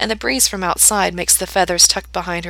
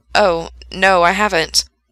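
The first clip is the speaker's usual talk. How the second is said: mildly embarrassed, sheepish, much slower; 5 dB louder than usual. A man answers a woman's eager question, slightly embarrassed. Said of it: "slightly embarrassed".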